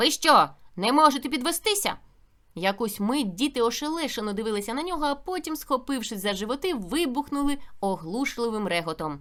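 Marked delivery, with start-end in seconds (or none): 0.0-1.9 loud, thundering, stern bark. A narrator reads a pupil at the teacher's desk addressing the class, thundering. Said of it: "і гримнув".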